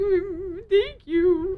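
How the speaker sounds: acted blubbering through tears, high and loud. Retelling how someone reacted to a gift: imitating Steve bawling. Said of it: "Steve started just bawling. He was like".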